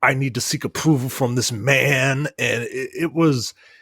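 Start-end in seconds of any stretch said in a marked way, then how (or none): 0.0-2.3 whining, with the word man stretched out. Mocking a game's portrayal of Samus: whiny Samus impression. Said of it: "this whiny".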